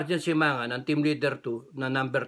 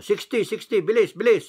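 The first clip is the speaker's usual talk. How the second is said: raised, high-pitched shouting; 7 semitones higher, 7 dB louder than usual. Retelling what was shouted during an exchange of fire: imitating own shout. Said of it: "tapos sinisigaw ko".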